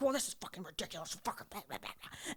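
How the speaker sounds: hushed, whispered, angry swearing rant. Retelling dad complaining on the plane, imitating dad's angry rant. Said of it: "Your dad went full Karen".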